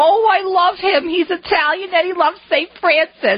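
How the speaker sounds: put-on very high-pitched New Jersey accent. Retell your mom's phone call after she watched EWTN, in Rosie's Jersey accent. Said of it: "with her Jersey accent".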